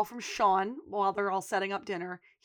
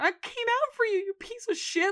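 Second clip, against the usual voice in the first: put-on very high pitch, on the verge of tears; 12 semitones higher than usual. Retelling a show scene of a character beating a guy: imitating a near-tearful mutter under breath. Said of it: "under his breath ... on the verge of tears".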